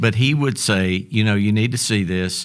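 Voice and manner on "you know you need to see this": ordinary talk, nothing marked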